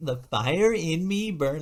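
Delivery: very high put-on California girl voice. Showing how a motivation line should be said, upbeat Cali girl voice. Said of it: "like an upbeat uh, like Cali girl kind of voice".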